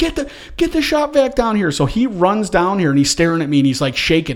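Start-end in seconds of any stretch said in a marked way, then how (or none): 0.0-1.7 play-acted, very high, stretched-out yell. Retelling a flood at home, the speaker acts out calling to the son: retelling a yell. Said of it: "I'm yelling for my son".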